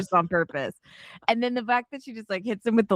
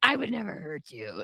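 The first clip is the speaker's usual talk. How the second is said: mock creepy, unsettling voice; 5 semitones lower, 7 dB quieter than usual. Imitating the boyfriend in the movie saying his line: imitating a creepy voice. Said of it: "he made his voice, like, all creepy".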